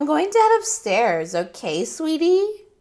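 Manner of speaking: syrupy, sickly sweet, very high, loud and swooping. A woman speaks to a man before heading off: sickly sweet tone. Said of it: "Heather said in a sickly sweet tone".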